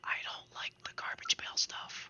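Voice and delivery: secretive, low, hushed whisper, barely audible. Retelling what a man said after looking left and right, low hushed voice. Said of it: "in a really low voice".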